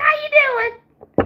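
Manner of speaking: put-on very high little-girl voice. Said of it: "my daughter sounds just like a little girl".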